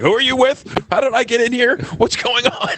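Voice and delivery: bewildered, flustered voice. Acting out Bernie being trolled with questions and run in a circle, flustered Bernie impression. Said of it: "poor Bernie just gets so flustered".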